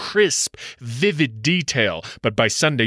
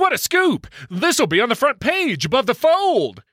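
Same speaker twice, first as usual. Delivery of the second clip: very high-pitched, thrilled, excited exclaiming; 11 semitones higher than usual. Your editor friend hears your story on the phone and replies: excited. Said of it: "he says excitedly".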